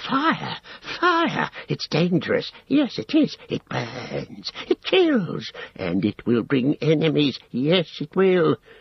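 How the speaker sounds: scared, high hiss with wildly swinging pitch, ranting. Gollum answers Sam's surprised question; hissing Gollum voice. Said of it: "hissed Gollum".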